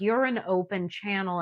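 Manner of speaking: normal talking voice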